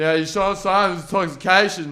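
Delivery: loud yell. Retelling talking to a patron over blaring music: imitating his own yelling.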